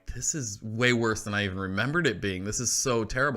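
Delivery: ordinary delivery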